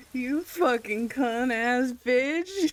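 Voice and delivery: laughing, cursing outburst. In a game, a character looks up at the man with the shotgun, laughing while cursing. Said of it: "I just look up at him and laugh and go".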